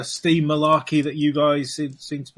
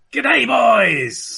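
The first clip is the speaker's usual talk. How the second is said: put-on mad pirate voice, higher and louder; 8 semitones higher, 6 dB louder than usual. Voicing the captain approaching the men in full mad pirate mode. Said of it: "in full, slightly mad ... pirate mode".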